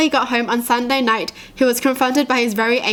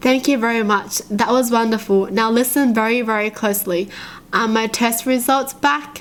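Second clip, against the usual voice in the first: normal talking voice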